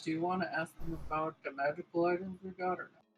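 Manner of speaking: soft, hushed, in-character half-whisper. Half-whispering a question in character to another party member: half-whispering in character. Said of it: "I am gonna whisper to Boom Crash".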